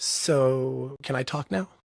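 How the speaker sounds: very calm, slow, unhurried, drawn-out so. Retelling how the counselor answered after a long spiel: imitating someone speaking very calmly. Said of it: "very calmly".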